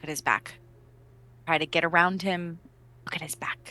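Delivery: fast hushed whisper. Playing a character who flies back to whisper into another character's ear: whispering into someone's ear. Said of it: "whisper into Draven's ear".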